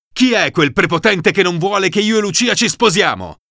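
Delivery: furious, determined voice. Renzo rushes into Don Abbondio's house and confronts him: Renzo, angry and determined. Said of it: "con tono deciso e infuriato".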